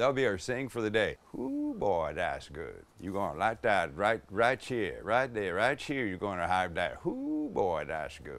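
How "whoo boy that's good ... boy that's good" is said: put-on heavily laid-on, swooping, swinging Cajun accent. Imitating a TV cook's saying: Justin Wilson Cajun accent. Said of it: "he had that kind of accent".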